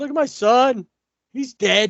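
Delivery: put-on movie-style English accent. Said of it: "with an English accent".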